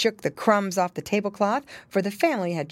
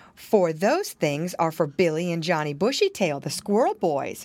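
plain reading voice

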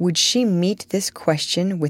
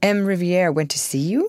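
ordinary delivery

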